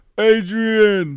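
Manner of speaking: very high, very loud, shrill yell. Imitating the famous line from the first Rocky film: imitating Rocky yelling Adrian. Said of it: "It's literally like".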